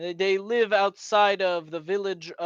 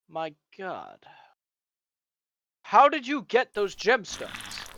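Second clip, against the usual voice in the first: put-on swooping elderly man voice. Voicing an old man who asks about the gemstones: voicing an old man. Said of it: "and he went".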